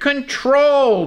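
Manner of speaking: emphasizing 'controlled'. A speaker explaining a scripture passage, with stress on 'controlled'. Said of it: "I want to stress the word controlled".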